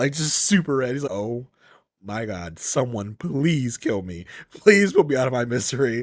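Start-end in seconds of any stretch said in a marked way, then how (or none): 1.1-6.0 put-on desperate, embarrassed, mortified begging voice. Imitating Will as he turns red in an awkward scene: imitating mortified embarrassment. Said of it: "you just see Will just turning red".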